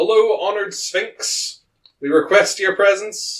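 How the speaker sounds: high, slow called-out shout.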